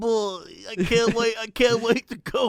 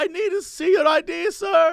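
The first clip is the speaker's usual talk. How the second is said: put-on German accent, high pitch, slow pace; 7 semitones higher than usual. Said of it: "sort of has a German accent".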